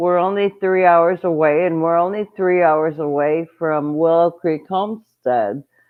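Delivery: ordinary delivery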